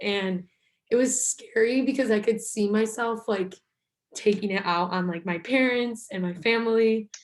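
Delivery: emotional, near-tearful voice welling up with feeling. Sharing a personal story with another person, the speaker is getting emotional. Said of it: "I don't know why I'm getting emotional".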